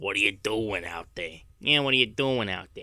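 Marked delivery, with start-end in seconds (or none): 0.0-1.4 put-on grandmother voice, much lower in pitch.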